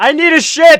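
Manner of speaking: top-of-the-lungs shriek, very loud and very high. Voicing a character who walks out announcing his need: screaming at the top of his lungs. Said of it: "scream at the top of his lungs".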